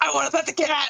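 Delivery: put-on, extreme gremlin-like voice. Retelling asking to pet someone's cat, in a gremlin voice. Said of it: "Like in the most gremlin voice I can".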